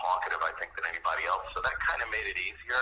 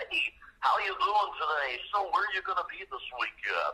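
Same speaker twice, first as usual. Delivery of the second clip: fake radio-host voice, very high pitched; 11 semitones higher than usual. Describing how radio people talk, the speaker demonstrates a typical radio voice. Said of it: "typical radio voice".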